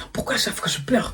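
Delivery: soft, frustrated, self-reproaching whisper.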